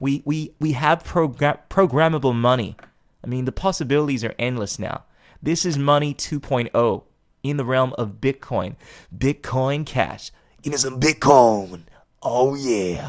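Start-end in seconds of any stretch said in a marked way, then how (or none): 9.2-13.1 put-on wrestling promo voice. Hyping Bitcoin Cash, the speaker slips into a WCW wrestling promo voice. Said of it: "I don't know why I did that voice".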